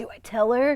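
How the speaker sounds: voice of a beach surfer dude. Retelling a story of a guy proposing with a decoy ring, in a surfer voice. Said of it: "you got a surfer voice".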